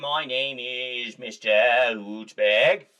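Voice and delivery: slow drawn-out Boston accent. While drawing an owl, you introduce him in a John F. Kennedy voice, Boston accent. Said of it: "he's got that Boston Hootsburg".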